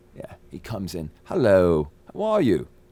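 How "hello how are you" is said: put-on English accent, spoken slowly. Retelling how a British man came into his trailer: English accent. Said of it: "he has an English accent now".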